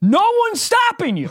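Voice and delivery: very high, shrill yelling. Recounting a tense argument in a room of seven people, retelling own yelling. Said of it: "I'm yelling".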